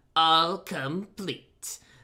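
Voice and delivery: loud, triumphant exclamation with an announcer-like flourish. The Toad, pulling open a locker, speaks triumphantly. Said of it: "said the toad triumphantly".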